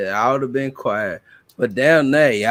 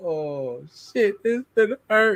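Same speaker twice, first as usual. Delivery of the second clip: mock fearful, tearful, high crying; 7 semitones higher, 5 dB quieter than usual. Retelling walking out to pick a switch: imitating own past crying. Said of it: "I'm crying all the way out there".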